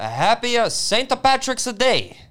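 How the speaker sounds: fake Italian accent. Mimicking the other speaker's on-air greeting, in a bad italian accent. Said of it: "That's kind of Borat".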